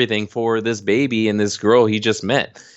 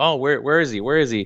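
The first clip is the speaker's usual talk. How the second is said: mock, bursting, eager excitement; 4 semitones higher than usual. Retelling a movie scene where the brother asks where he is: imitating someone all excited. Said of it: "all excited".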